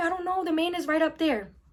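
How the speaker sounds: put-on high, frantic yelling and rambling. Retelling telling the cop what happened, imitating yelling and rambling. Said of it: "I'm yelling everything at him. I'm rambling".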